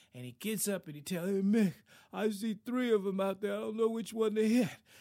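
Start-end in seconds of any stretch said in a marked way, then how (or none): 1.5-4.7 put-on dazed punch-drunk boxer voice, loud and pitched up. Acting out the boxer getting up after being hit and hit, telling Mick, best Rocky impression. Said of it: "Maybe do my best Rocky impression".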